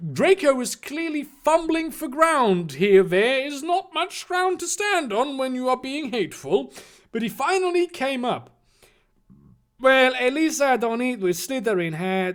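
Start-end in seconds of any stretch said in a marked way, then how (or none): 9.8-12.4 high, heavily exaggerated, thick Chinese accent. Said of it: "he's Chinese now".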